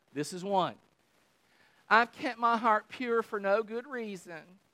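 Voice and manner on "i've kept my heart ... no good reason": complaining, whining voice. Reading a line from the Psalms aloud in a whiny, complaining voice. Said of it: "You have to read it like that".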